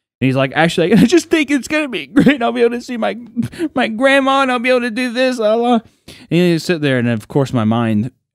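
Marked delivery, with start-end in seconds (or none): 0.6-5.8 very high, tearful, blubbering sobbing, acted out. Retelling how a friend talked about seeing his grandma, imitating someone sobbing while talking. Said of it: "he's sobbing".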